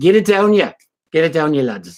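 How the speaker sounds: put-on really awful Scottish accent.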